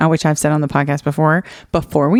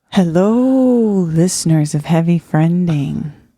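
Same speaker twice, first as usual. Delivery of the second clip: eerie, spooky put-on voice, drawn out. Asked to do the intro, the speaker greets listeners in a spooky voice. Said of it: "Is that spooky?".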